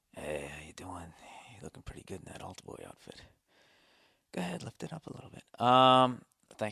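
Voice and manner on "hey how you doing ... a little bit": hushed, soft, breathy priest voice.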